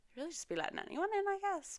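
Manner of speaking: high, fast sarcastic aside like an inner voice.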